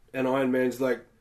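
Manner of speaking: ordinary delivery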